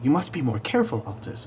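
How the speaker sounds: whispered speech. Healing another character in the game, whispering. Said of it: "whispering to you".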